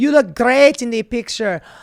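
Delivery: put-on crude Slovenian accent. Reading aloud an email from Melania to a friend: bad Slovenian accent. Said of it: "I do a shit Slovenian accent".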